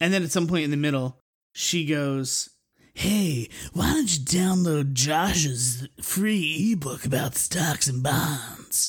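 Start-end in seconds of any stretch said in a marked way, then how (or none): 2.9-8.9 mock sexy woman's voice, much slower. Describing the investment podcast's mid-show ad, imitating a sexy woman's voice. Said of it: "When I just did my voice just then".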